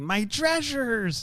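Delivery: very high, put-on pirate voice. Retelling a movie scene where Melissa Joan Hart sounds like a pirate: imitating Melissa Joan Hart's pirate voice. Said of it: "sounds a bit like a pirate".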